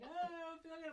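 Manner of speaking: half-dead, high bawling wail. Retelling what a man said, half dying on the floor: imitating someone bawling.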